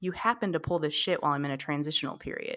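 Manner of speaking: mock-deadpan, straight-faced delivery. Retelling a film scene where one man holds a gun on another; retelling a deadpan line. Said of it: "he looks at him deadpan and he says".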